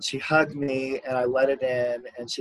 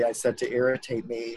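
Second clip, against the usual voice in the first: ordinary talk, nothing marked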